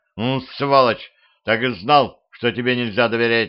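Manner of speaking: ordinary talk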